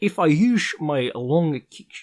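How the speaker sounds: very slow, dragged-out attempted Dutch accent. Quoting a fighter's promo line while trying a Dutch accent: accidental Sean Connery voice. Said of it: "that's like Sean Connery".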